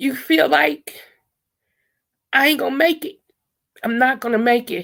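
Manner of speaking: voice holding back tears. Speaking to the viewers while trying not to cry: holding back tears. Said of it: "I'm trying to say this without crying".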